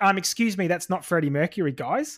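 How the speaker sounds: ordinary talk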